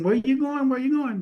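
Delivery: put-on high, rapid-fire yelling and screaming. Retelling what everyone yelled when he was told to roll his stuff up, imitating people yelling. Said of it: "everybody yelling and screaming".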